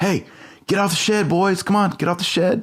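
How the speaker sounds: very high, passive-aggressive voice. Retelling a skit where a dad at a backyard grill tells boys off the shed; mock passive-aggressive dad. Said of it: "more and more passive aggressive".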